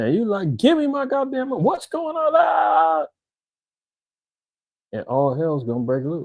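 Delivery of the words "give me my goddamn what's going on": very high, drawn-out, fed-up exasperated outburst. Acting out a customer yelling at the bank: acting out frustration. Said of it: "you get even more frustrated".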